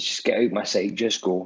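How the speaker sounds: ordinary talk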